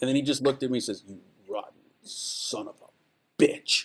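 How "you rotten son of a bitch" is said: very slow, unhurried, drawn-out delivery, each word stretched. Retelling how an actor answered the request: James Coburn voice. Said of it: "But it was James Coburn's voice".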